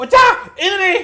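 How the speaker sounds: shouting goblin voice. A game master voices a goblin shouting as it shoots at a player. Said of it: "It shouts out".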